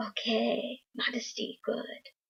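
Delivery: horrible put-on Japanese accent. Quoting the speaker's dad reacting to the explanation of modesty, bad japanese accent. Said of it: "I just gave my dad a Japanese accent".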